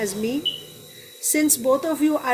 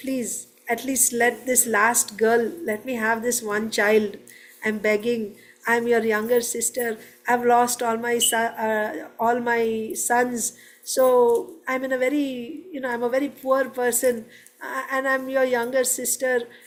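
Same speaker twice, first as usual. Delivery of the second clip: ordinary talk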